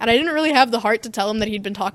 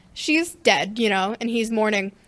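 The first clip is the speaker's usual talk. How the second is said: usual speaking voice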